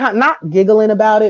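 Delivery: plain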